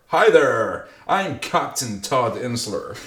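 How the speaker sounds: slow, piratey drawl in a pirate captain voice. Reading out a pilot's introduction, in a piratey voice. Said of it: "I sounded a bit piratey there".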